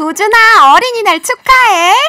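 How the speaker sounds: very high, squeaky, loud helium voice. Calling out a Children's Day greeting to a child: voice like a voice changer. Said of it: "혹시 무슨 음성 변조 장치 이런 거 있는 거 아니죠?".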